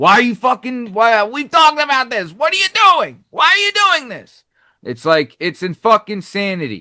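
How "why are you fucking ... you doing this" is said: mock exasperated scolding, high-pitched yelling. Describing disciplining a kid, reenacting own yelling at her. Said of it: "I feel like I'm yelling at her".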